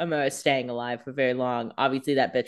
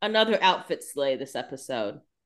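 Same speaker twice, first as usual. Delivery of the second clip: plain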